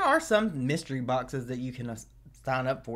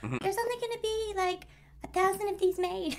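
little put-on whistle voice, much higher. Retelling an artist announcing a limited vinyl run, in her little whistle voice. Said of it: "in her little whistle voice".

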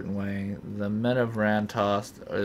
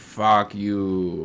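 put-on gravelly evil voice, louder; 5 dB louder than usual. Players watching enemies around a character voice those enemies: gravelly evil voice. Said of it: "I guess in their gravelly evil voice".

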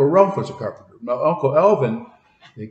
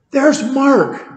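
mock, shrieked, high, loud scream; 12 semitones higher, 5 dB louder than usual. Retelling how someone spotted him outside the burning house: imitating someone screaming. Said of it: "Somebody screamed".

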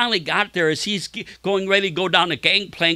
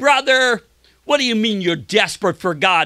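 ridiculing, derisive, scornful tone; 4 semitones higher than usual. Retelling how a man answered him in front of the kids: retelling a man's mockery. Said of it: "began to mock him and said".

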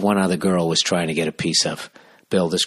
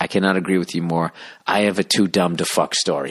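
ordinary delivery

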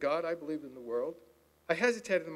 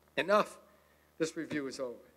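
usual speaking voice

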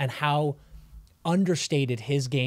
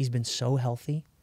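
very soft, quiet voice. Avoiding jinxing a healthy player by saying it aloud: saying it very softly. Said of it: "I'm gonna say it very softly".

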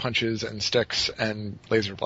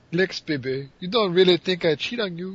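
high, loud, sultry cartoon Russian accent; 8 semitones higher, 5 dB louder than usual. Quoting Tala's line to Lex from an episode, in a Natasha moose-and-squirrel voice. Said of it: "That was moose and squirrel".

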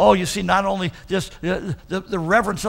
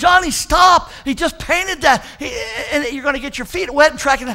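put-on high-pitched hollering in a mother voice; 8 semitones higher, 4 dB louder than usual. Telling a story, acting out a mother hollering out the window at her son. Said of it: "She hollered out again".

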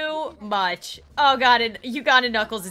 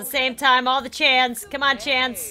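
ordinary talk

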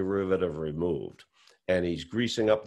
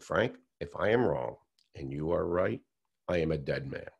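grave, very solemn, hushed voice; 2 semitones lower, 5 dB quieter than usual. Quoting a man's answer to Frank, retelling in a very solemn voice. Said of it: "in a very solemn voice".

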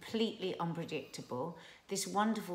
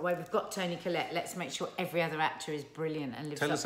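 ordinary talk

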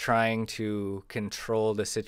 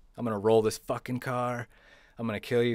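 imitated screaming yell; 2 semitones higher than usual. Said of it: "And it's screaming, yelling".

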